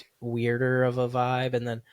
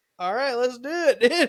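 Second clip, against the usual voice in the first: put-on high, laughing, excited drunken voice. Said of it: "I was".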